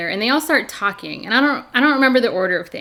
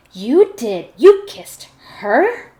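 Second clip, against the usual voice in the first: mock snooty, disapproving, slow, condescending and judgmental; 3 semitones higher, 4 dB louder than usual. Recapping a show scene, quoting a woman questioning a man, mock-condescending and judgmental. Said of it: "with the most like condescending, judgmental tone".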